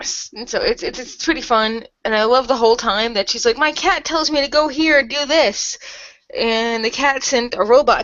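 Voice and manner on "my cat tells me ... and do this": mock, faux-innocent, cheerful voice. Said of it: "ironically innocent".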